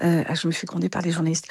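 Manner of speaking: soft, fast, hushed aside with dropped voice.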